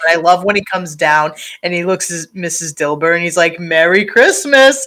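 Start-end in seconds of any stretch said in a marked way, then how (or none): 3.6-4.9 giddy, overjoyed, high, loud voice. Retelling a character greeting Missus Dilber: imitating someone giddy and happy. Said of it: "giddy and happy".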